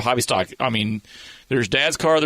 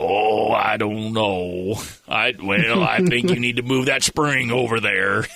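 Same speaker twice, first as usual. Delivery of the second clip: growly, thoughtful voice with a growl in it; 2 semitones lower than usual. Retelling how Dennis answers questions in the pits, imitating Dennis's growly voice. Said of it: "he'll be in his growly voice".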